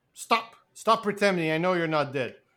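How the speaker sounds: ordinary talk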